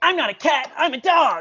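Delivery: fed-up, frustrated anime hero voice, high, loud, drawn out. Imitating an anime character who sounds a certain way: imitating Inuyasha's voice. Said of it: "the guy who sounds like this".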